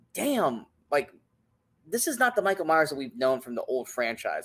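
ordinary talk, nothing marked

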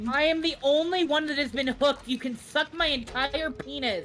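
sudden angry outburst. Snapping at someone who won't leave them alone, in an angry outburst. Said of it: "Sorry, I just got mad".

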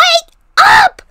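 very loud, very high-pitched shrieking scream. Waking the others on Easter morning, screaming. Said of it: "You don't have to scream".

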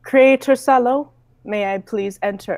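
robot-like speech. Describing how Talos enters the scene after four knocks, in Talos robotic voice. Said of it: "you would hear a robotic voice saying".

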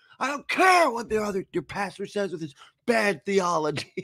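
put-on high, angry ranting, almost shouting. Retelling how a pastor angrily called out other pastors: imitating someone shouting angrily. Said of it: "shouting about it almost".

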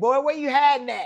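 imitated angry, mad voice. Retelling searching the house for her son: retelling own angry call. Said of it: "'cause at this point I'm mad".

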